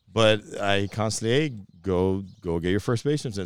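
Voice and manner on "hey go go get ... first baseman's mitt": normal talking voice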